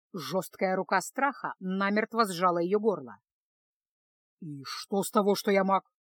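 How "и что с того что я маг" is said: menacing, threatening tone. A mage confronts a girl who hid in his wagon, menacing. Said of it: "грозно спросил чародей".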